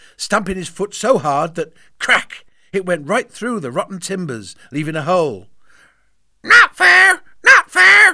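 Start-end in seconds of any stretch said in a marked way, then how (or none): 6.5-8.2 very loud, very high, squawking parrot voice. Narrating the ship's parrot echoing Rotten Robbin's complaint; parrot squawk. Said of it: "squawked the first mate".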